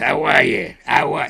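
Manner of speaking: distinctive rough, creaky buddy-style voice. Imitating a best friend who talks in a peculiar way. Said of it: "Talks like this".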